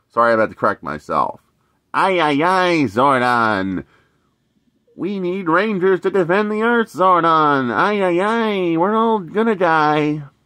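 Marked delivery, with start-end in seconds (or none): 1.9-10.2 high-pitched robot voice. Doing the 1990s Alpha from Power Rangers: 1990s Alpha robot voice. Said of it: "I don't do a good voice of this Alpha, but I do of the 1990s Alpha".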